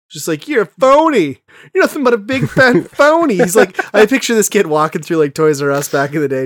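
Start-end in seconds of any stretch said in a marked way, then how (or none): 0.4-3.3 very high-pitched cartoon character voice. Imitating someone who calls others phonies: Family Guy character voice. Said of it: "It's the guy from Family Guy".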